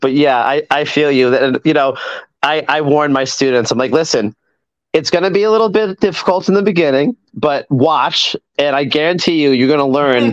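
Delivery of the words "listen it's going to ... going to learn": usual speaking voice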